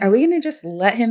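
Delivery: ordinary delivery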